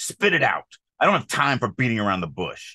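harsh, curt, aggressive, snappy voice. Reading a replacement line aloud to show its tone: aggressive and snappy. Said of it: "very aggressive and snappy".

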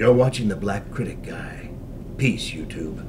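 cold, stern commander voice. Asked for a favor at a convention, look to the camera and speak in Gendo's voice. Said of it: "in Gendo's voice".

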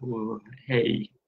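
soft, calm voice. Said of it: "he's got a really calm voice".

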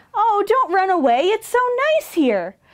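contented, happy sigh in a very high voice. Reading a story, the dragon answers the fleeing animals: sighing happily. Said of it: "Sapphire sighed happily".

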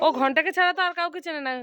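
ordinary delivery

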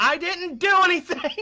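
shrill, very high, loud yell. Hearing two people crying loudly from across the way, answering them: yelling back. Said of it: "I just yell back".

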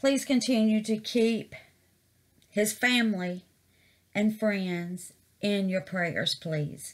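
choked up, emotion catching in the throat. Asking viewers to keep a friend's family in their prayers, choked up. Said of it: "I'm getting choked up a little bit".

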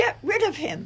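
small, very high voice. Betts looks at the speaker after the man has left and talks in her little high voice. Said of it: "said in her little high voice".

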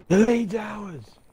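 high, loud yell. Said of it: "Why are you yelling everything?".

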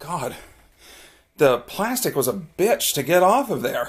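slow, winded, puffing, out of breath. Speaker has just finished getting plastic wrapping off, talking out of breath. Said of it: "I'm out of breath because".

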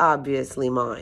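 plain

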